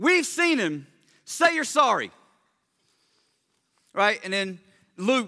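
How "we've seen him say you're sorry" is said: raised, pitched-up sermon-style preaching. Retelling Peter's sermon to the crowd in a paraphrase: acting out Peter preaching. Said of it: "the [name] paraphrase of Peter's sermon".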